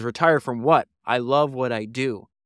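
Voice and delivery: ordinary talk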